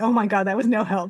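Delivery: ordinary talk, nothing marked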